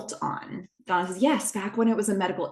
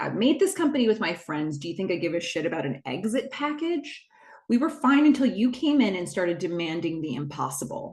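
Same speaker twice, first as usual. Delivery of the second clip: ordinary delivery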